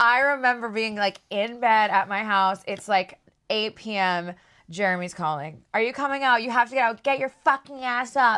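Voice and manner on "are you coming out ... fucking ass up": put-on yelling with voice pitched high. Retelling a late call from a friend: imitating someone yelling. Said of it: "Like, yelling at me".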